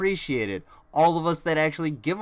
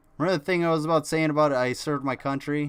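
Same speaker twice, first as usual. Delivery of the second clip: ordinary talk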